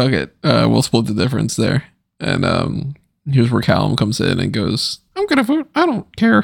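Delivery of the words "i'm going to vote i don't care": very high-pitched puppet character voice. Act out Callum coming in to say he is going to vote, in a Muppet voice. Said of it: "I gave him a Muppet voice".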